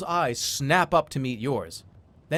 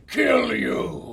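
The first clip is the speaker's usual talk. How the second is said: raspy, rough, high-pitched screaming troll voice; 8 semitones higher than usual. Narrating a scene where a charging troll attacks, screaming troll voice. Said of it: "He screams".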